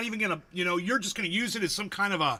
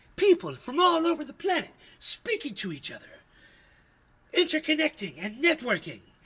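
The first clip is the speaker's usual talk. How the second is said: overeager, pitched-up sing-song, swooping all over; 7 semitones higher than usual. The speaker slips into Chip Douglas from the Cable Guy: Chip Douglas voice. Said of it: "I sound like I sound like uh like uh Chip Douglas from the Cable Guy".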